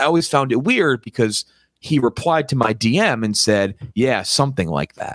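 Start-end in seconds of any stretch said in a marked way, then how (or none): none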